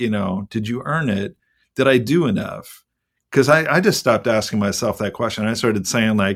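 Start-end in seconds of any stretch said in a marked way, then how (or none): none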